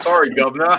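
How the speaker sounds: loud, clumsy, fake, bad British accent. The speaker, who admits being terrible at accents, tries a bad British accent. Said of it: "You're supposed to say governor, right?".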